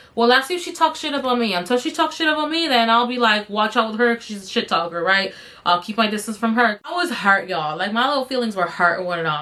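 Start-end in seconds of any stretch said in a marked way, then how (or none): none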